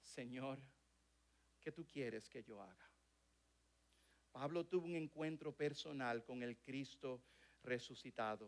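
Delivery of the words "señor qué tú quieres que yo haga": soft, trembling, fearful voice, acted out. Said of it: "yo respondí con voz temblorosa, temiendo por mi vida".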